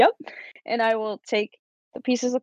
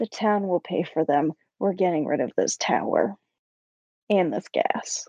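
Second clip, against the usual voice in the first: quietly muttered under breath, aside; 4 semitones lower than usual. After promising the kids they will pay, speaker adds a remark muttered under breath. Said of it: "And under my breath".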